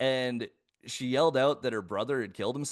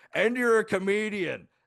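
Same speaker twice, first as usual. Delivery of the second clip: put-on high, acted, drunken heckling shout; 8 semitones higher than usual. Retelling a heckle from a hammered front-row audience member: imitating a drunk heckler yelling. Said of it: "just fucking hammered in the front row yells out".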